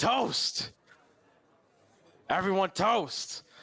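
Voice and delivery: shrill, very high, loud yell. Standing up with two mugs to get everyone's attention: yelling a toast. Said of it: "And I'm gonna yell".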